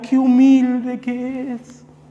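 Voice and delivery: high, slow, sarcastic mock admiration.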